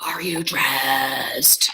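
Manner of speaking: low, goofy, put-on crazy voice. Retelling waking her son Evan over the Nest camera, retelling own crazy voice. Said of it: "having this like all like crazy voice".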